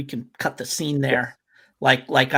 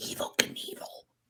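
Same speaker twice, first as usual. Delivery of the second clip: hushed, lowered, secretive voice. Telling a story, saying a name like a guilty secret, lowered, hushed voice. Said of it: "Like I lower my voice".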